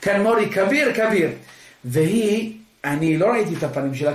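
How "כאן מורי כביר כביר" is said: mock blazing, fervent excitement. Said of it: "אני ככה בהתלהבות כזה חסידית, יוקדת".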